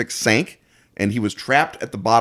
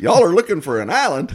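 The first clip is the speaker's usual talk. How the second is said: fake, hammy, bad Texan accent, pitched up; 8 semitones higher than usual. Showing how people will read the story aloud, in a bad Texan accent. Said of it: "in bad Texan accents".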